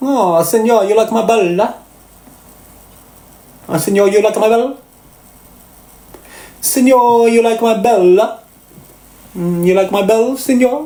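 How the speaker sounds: put-on Italian accent with singsong pitch. Asking whether he sounds Italian, the speaker tries a fake Italian accent. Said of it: "Do I sound Italian?".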